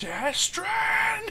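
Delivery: very high-pitched, desperate crying out. Voicing an enemy who looks at a player: crying out in character. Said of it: "Sounds like he's crying for Big Brother".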